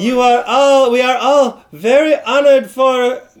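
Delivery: put-on not-great Italian accent. Mimicking an Italian actress nobody recognized, bad Italian accent. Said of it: "that's not the greatest Italian accent".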